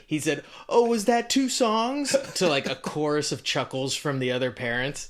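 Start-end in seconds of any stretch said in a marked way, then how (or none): 0.7-2.1 put-on broad, thick New Jersey accent, very high-pitched. Retelling what a parent said after the two songs: imitating Ted Luster's thick New Jersey accent. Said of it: "which you ran with for how, whenever we tell this story".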